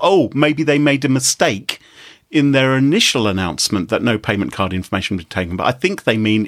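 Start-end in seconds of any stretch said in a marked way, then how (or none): none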